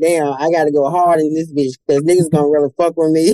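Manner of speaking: ordinary delivery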